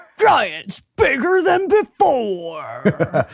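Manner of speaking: swooping monster truck commercial announcer voice. Speaker performs the voice they hear a title in, monster truck announcer voice. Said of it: "that's the voice that I hear it in".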